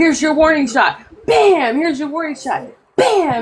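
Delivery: put-on forceful, strong voice. Retelling how Jessica spoke at the mic: imitating a strong voice. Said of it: "she had a strong voice".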